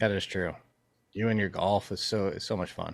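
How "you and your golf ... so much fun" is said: sarcastic-sounding ring. Teasing another speaker about their golf hobby: sarcastic-sounding tone. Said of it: "that sounded so sarcastic".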